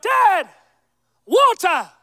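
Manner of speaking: put-on high-pitched child voice shouting out. A dad retelling how his son yelled out from bed at 2 a.m., retelling a yell. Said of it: "he yelled out".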